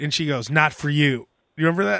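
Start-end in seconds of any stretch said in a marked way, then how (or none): 0.5-1.3 annoyed, angry, pissed-off tone. Retelling a movie scene where Tara Reid comes out pissed off: imitating Tara Reid pissed off. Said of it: "Tara Reid comes out all pissed off".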